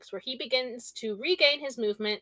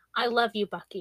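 spoken softly. A woman sitting before a man, holding his face, speaks to him softly. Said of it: "she said softly".

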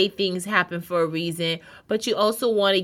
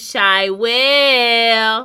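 put-on loud, cutesy child voice, will stretched out; 4 semitones higher, 6 dB louder than usual. Radio host says her own name the way children say it, saying it like the children do. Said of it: "I try to say it like how the children say it".

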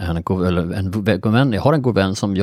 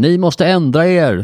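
mock very high, slow, drawn-out megaphone shout; 9 semitones higher, 6 dB louder than usual. Speaker recalls standing with a megaphone addressing people, retelling a megaphone shout. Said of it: "stod jag och skrek".

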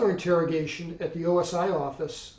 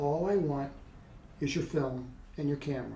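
voice sunk to a soft, hushed whisper; 3 semitones lower, 6 dB quieter than usual. Speaker retells what a man said after getting no answer, retelling a whisper. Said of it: "he lowered his voice to a whisper".

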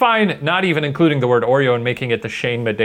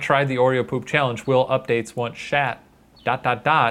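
plain

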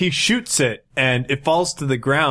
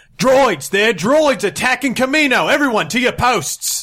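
urgent, commanding yell, very high pitched; 10 semitones higher, 4 dB louder than usual. During basic training, the commander alerts the clones, Synox shouting orders. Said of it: "Synox shouts out".

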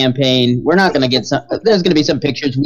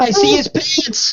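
mock very high, tearful, drawn-out crying wail. Acting out an imagined video of someone on his knees: imitating Danny crying out. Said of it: "on his knees with his hands in the air crying".

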